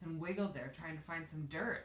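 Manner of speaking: ordinary delivery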